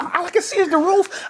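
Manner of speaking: mock panicked, very high, slow and drawn-out. Retelling being stuck in a game with friends, imitating own panic. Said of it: "And then I'm panicking".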